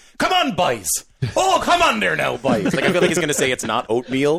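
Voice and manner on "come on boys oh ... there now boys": clumsy fake Newfoundland accent, high, sing-song. Retelling how a teammate goads them along while sweeping: imitating Mitch's bad Newfoundland accent. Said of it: "he's so bad at it".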